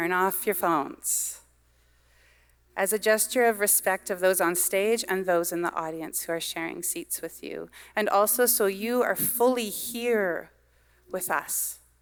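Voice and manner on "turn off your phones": stern parental mom voice. Asking the audience to turn off phones: mom voice. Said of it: "This is my mom voice now".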